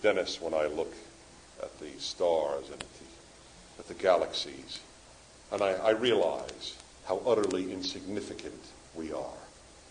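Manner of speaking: mellifluous, beautifully spoken voice. Retelling what a debate guest said about the stars: Carl Sagan's mellifluous voice. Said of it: "in his mellifluous voice".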